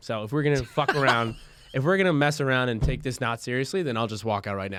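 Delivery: ordinary talk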